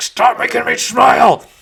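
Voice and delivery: very loud, very high, drawn-out furious yell. Voicing a creature who cannot stop smiling, agitated: really mad. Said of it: "And he gets really mad".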